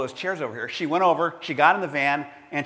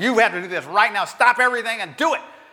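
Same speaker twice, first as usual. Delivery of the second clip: haughty, demanding, rapid, high-pitched imperious voice; 6 semitones higher than usual. Retelling a woman from Parks and Recreation ordering another woman to move her van, mimicking an imperious, demanding tone. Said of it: "this imperious, demanding tone of voice".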